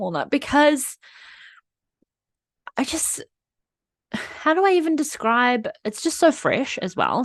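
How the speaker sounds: teary, emotional outpouring with swooping pitch. A podcast host talks about feeling embarrassed over the podcast, getting emotional. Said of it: "I'm getting emotional again".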